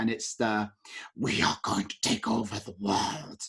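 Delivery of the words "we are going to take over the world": deep, whispery, sinister evil alien villain voice. Describing the evil alien villain trope in films, deep whispery evil alien voice. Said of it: "the evil alien voice".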